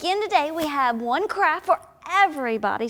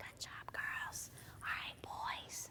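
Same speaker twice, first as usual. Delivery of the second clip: soft, unvoiced whispering. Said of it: "let's whisper".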